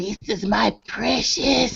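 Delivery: very slow, breathy, whispered drawl. Teasing another speaker about loving crackers: Gollum voice. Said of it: "I'm the golem".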